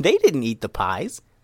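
ordinary delivery

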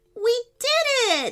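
very high, thrilled, triumphant excited shout. Celebrating as the fishy foe sinks back into the pond, shouting excitedly. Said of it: "shouted [name] excitedly".

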